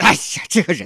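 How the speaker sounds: loud, pent-up, fed-up, exasperated outburst. Acting out how someone vents after a forced-polite phone call, angry after hanging up. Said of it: "你明明很生气".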